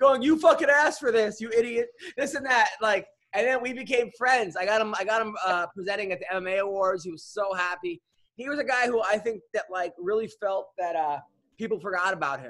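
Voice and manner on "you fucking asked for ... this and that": shrill, loud yelling. Retelling a phone call where a wife yells at her husband: imitating someone yelling. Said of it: "My wife is yelling at me right now".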